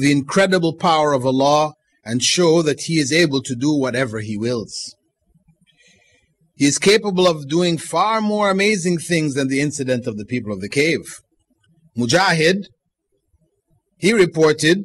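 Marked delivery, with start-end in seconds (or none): none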